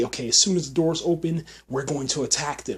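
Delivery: normal talking voice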